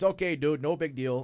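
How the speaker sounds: put-on Midwestern accent. Retelling Joe's reply to an apology for a broken leg: imitating Joe's Midwestern accent. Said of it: "it's like his Midwestern accent".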